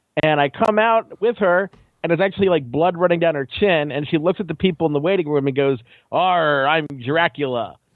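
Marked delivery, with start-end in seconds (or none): 6.2-7.7 put-on stage pirate voice on "arr". A mother just out of dental surgery tells the waiting room she's Dracula, pirate voice. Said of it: "Dracula doesn't sound like a pirate".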